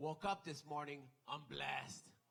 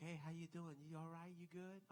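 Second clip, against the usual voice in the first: super friendly, nice everyday voice; 3 semitones higher, 7 dB quieter than usual. Demonstrating the speaker's own really friendly voice. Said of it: "I have like this really friendly voice".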